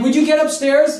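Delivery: fed-up, exasperated barking yell. Retelling yelling at a brother to get upstairs: retelling own yell. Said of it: "Yelling at him".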